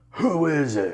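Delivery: huge, high, overwhelming monstrous voice. Retelling knocking on the door while he showers, imitating an overwhelming monster voice. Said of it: "this overwhelming voice of like this this monster of a voice".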